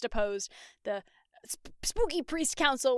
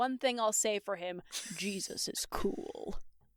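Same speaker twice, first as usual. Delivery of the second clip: deep baritone bass, dropped very low and soft; 4 semitones lower, 6 dB quieter than usual. Retelling a scene, the speaker voices Caiaphas in a deep baritone bass. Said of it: "imagine this in like a deep baritone bass".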